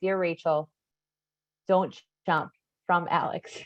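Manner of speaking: ordinary talk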